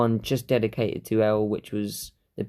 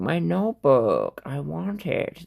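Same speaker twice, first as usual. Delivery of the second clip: strange, swooping, high bird voice, very slow, drawn out; 6 semitones higher than usual. Comparing their own voice to a dub's Shinigami, doing a weird bird-like Shinigami voice. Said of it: "I sound more like that weird, you know, bird sort of Shinigami that goes".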